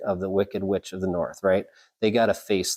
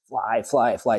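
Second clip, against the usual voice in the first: ordinary delivery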